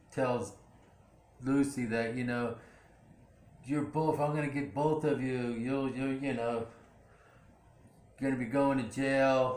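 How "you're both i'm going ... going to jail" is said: ordinary talk, nothing marked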